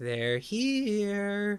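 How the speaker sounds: eerie, creepy, high, drawn-out possessed voice. Speaker retelling a character's line while discussing the film, creepy Poltergeist voice. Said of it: "creepy exorcist voice".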